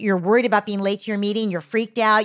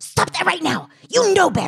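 very high, swooping, hissed scolding tone; 9 semitones higher than usual. Showing how a parent hisses at a child in a supermarket: imitating a parent hissing. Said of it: "wanna hiss at the kid".

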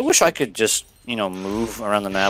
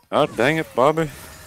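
practiced, pitched-up animated-sitcom dad voice; 5 semitones higher than usual. Saying a line again as asked, in Hank Hill's voice. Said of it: "I've been working on it".

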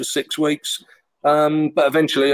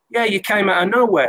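bad put-on Scouse accent, higher pitch; 6 semitones higher than usual. Retelling a phone call from Millwall goalkeeper Tony Warner, Tony Warner in Scouse accent. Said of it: "I'm not good with Scouse accents, but I do it anyway".

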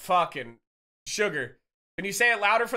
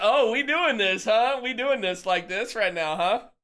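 playful, jokey teasing tone; 3 semitones higher than usual. Imitating Sniper's reaction to being teased: imitating Sniper. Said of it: "He's like".

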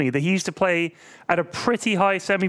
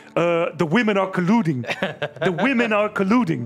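put-on Dutch accent in English. Retell what Xylas came in and said to you all at last night's poker, in his Dutch accent. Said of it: "he just said to us in his Dutch accent".

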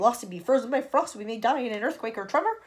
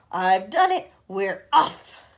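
loud, drawn-out big shout; 2 semitones lower, 6 dB louder than usual. Reading the centipede calling through a hole in the ceiling, shouted.

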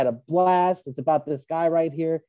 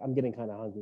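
put-on breezy, nonchalant, casual offhand delivery; 5 semitones lower, 11 dB quieter than usual. Retelling a line from the movie they watched: imitating a casual, offhand line. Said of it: "like it's fucking nothing".

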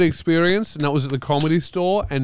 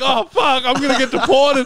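acted panic, much higher pitch; 10 semitones higher, 4 dB louder than usual. Recounting a man's questions about where you're staying; retelling own panic. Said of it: "And I start panicking".

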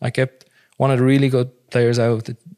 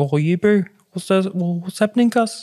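put-on Maori accent, much higher pitched; 7 semitones higher than usual. Recalling the accent picked up playing rugby with the boys, doing a put-on Maori accent. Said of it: "sort of a Maori accent".

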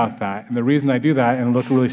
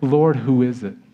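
ordinary talk, nothing marked

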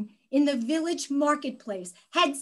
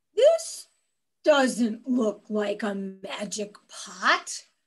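put-on low, grumpy, cranky old-bachelor grumble; 6 semitones lower than usual. Narrator voicing the bachelor in a story, grumpy old bachelor voice. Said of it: "there was a grumpy old bachelor".

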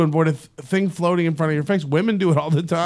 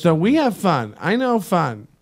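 slow, insistent office-lady voice. Acting out an office lady answering party plans: imitating an office lady. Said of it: "She goes".

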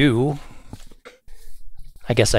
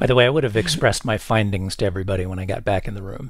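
ordinary delivery

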